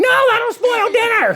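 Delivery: very high, shrill, screechy voice. Acting out the mom's interruption while telling the story: screechy mom voice. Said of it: "I made that the Mom sound screechy".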